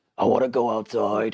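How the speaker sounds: low voice like a talking dog. Speaker reprograms a talking button to speak as the dog, talking dog voice. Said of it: "like in a voice that I could see the dog saying".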